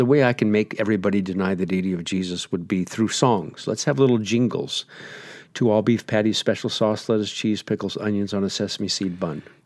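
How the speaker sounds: ordinary delivery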